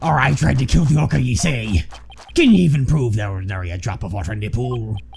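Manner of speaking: put-on pirate voice. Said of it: "I've now just gone full pirate".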